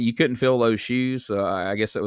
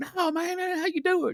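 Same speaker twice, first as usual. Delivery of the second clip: put-on Memphis accent, higher and quieter; 5 dB quieter than usual. Imitating someone in Memphis reacting to a weak catchphrase: imitating someone in Memphis. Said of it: "somebody in Memphis right now going like".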